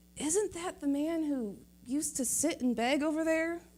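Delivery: mock muttering under the breath. Retelling what neighbors said on seeing the man walk: imitating someone muttering under breath. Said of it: "under their breath".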